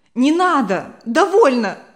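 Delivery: high-pitched, very loud, cutting shout. Reading a story, as the mother cutting off the father during a quarrel: shouted. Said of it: "крикнула мама".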